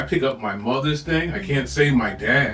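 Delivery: normal talking voice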